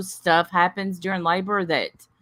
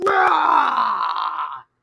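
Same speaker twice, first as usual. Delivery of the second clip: growling push sound. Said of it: "Timber makes this growling sound like".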